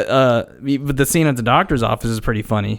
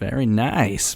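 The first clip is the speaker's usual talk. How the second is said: imitated creepy tone, quieter; 4 dB quieter than usual. Retelling a doctor's greeting, imitating a creepy tone. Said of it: "But he says it all creepy".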